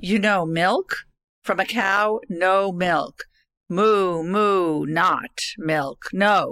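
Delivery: exaggerated baby talk. Retelling a coffee order mix-up, the speaker quotes Denise to a waitress: imitating Denise's baby talk. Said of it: "a barrage of baby talk".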